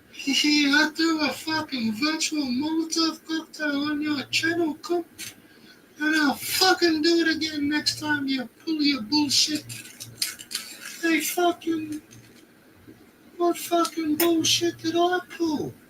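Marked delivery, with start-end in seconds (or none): 0.3-9.7 put-on Scottish or Irish accent. Ranting at someone about their channel, in a put-on Scottish or Irish accent. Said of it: "fucking Scottish or Irish".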